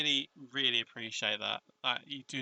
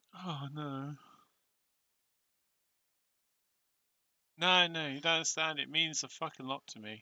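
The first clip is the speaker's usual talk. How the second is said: tearful voice, crying while talking; 2 semitones higher than usual. Reacting to receiving first ever fan art: crying while talking. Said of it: "I'm literally crying".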